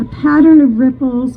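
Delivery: ordinary delivery, nothing marked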